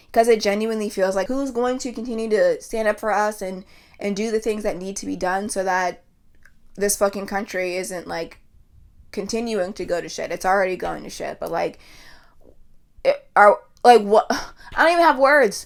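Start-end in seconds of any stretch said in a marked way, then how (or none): 11.4-15.7 stuttering, stammering, tripping over words. Ranting about the state of the country, at a loss for words, stuttering. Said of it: "I'm stuttering".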